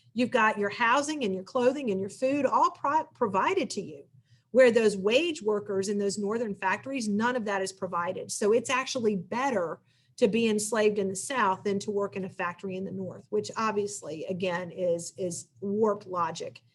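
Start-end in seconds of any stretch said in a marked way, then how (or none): none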